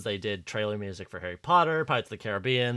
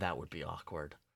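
mock-sad delivery, lower, quieter; 5 semitones lower, 13 dB quieter than usual. Recapping a scene, the speaker acts out a character's reply; retelling a sad line. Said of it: "sadly goes".

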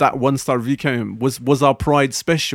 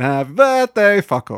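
taunting, mocking delivery; 3 semitones higher than usual. Reminding the other speaker what they said during a child's birthday, retelling a mocking remark. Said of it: "you kind of mockingly said".

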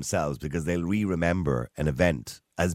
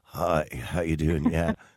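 put-on feeble, weak, sickly voice. Mocking how people sound phoning their boss to call in sick: mock call-in-sick voice. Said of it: "the voice they put on when they're ringing their boss".

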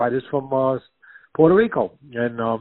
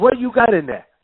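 put-on Puerto Rican accent, pitched up, rising tune; 9 semitones higher, 4 dB louder than usual. Retelling a story, the speaker quotes Willie asking through a door: imitating Willie's Puerto Rican accent. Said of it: "in the Puerto Rican".

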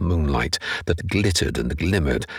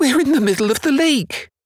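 very high, loud, carrying cry; 5 dB louder than usual. Narrator reads the gerbil calling to his master out on the waves, crying out as Jerry. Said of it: "holding out his hand for the little gerbil to climb onto his shoulder".

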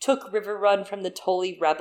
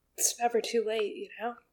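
tearful, weeping, crying while talking; 4 semitones higher, 7 dB quieter than usual. Finishing a thought about the book, crying while talking. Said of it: "she's actually crying, you guys".

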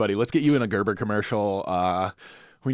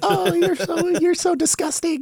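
very high, bright, bubbly, peppy voice; 4 dB louder than usual. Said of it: "If you say something very, like, peppy".

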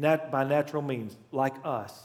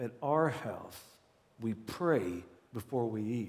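put-on slow, soft words through a clenched jaw; 5 semitones lower, 8 dB quieter than usual. Retell a mother answering her son Mikey, who kept eating, imitating her speaking through gritted teeth. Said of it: "said through gritted teeth".

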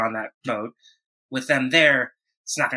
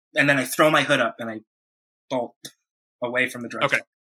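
ordinary talk

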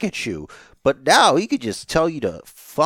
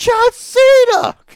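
put-on very high, voice-cracking, childlike excited scream; 8 dB louder than usual. Recalling john cena's return, reenacting a childlike excited yell. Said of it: "Like a child, I lost my shit".

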